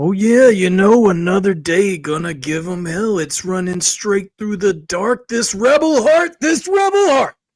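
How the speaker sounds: loud, high, belted wrestling announcer voice. Answering the host's question on how they feel: Macho Man impression. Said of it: "a good Macho Man impression".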